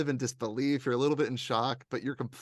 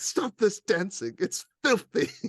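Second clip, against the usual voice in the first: staunch, stern British man, pitched up, swooping high; 8 semitones higher, 4 dB louder than usual. Describing a favorite character, the speaker quotes him, imitating staunch british man. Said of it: "the little staunch British man. He's like".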